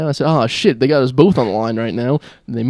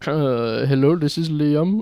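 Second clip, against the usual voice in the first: put-on non-American foreign accent; 2 semitones higher than usual. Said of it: "immediately went back to an American accent".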